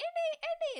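very high, loud, shrill repeated screaming. Describing a film's plane scene, a woman stuck in the cockpit; imitating a character screaming. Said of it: "like screaming".

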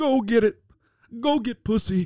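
high, put-on old grandpa voice. Retelling a grandpa urging his grandson on, put-on old grandpa voice. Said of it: "Why does he sound like the ghost of Ebenezer Scrooge".

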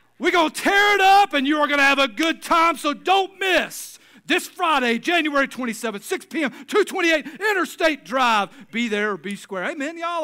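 pumped hype announcer voice, very high pitched. Performing the promo that was planned but never done: fired-up hype promo. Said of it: "I was fired up".

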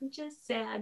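very quiet, hushed half-whisper. Retelling how she answered a man asking what was wrong, retelling a half-whisper. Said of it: "I whispered".

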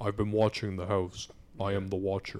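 deep, creepy voice. Describing how the show voices the letter writer, in a deep creepy Watcher voice. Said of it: "they make his voice sound really deep".

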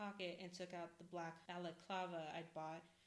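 ordinary delivery, nothing marked

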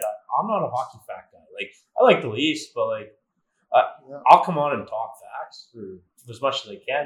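ordinary talk

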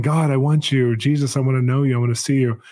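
put-on tearful, crying, pleading voice. Retelling a prayer to God from years ago: retelling own past crying plea. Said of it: "I'm crying, saying".

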